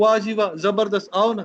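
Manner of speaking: usual speaking voice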